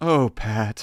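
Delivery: mock sincere disappointed tone. Retelling a mother's line from the movie: imitating sincere disappointment. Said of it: "it's so sincere".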